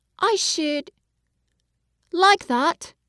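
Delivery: very slow, dreamy, drawn-out delivery. Narrator voicing a boy's answer to a proposal, very slow and dreamy. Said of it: "he said very slowly, his eyes looking dreamy".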